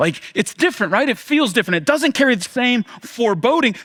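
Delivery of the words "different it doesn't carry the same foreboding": ordinary talk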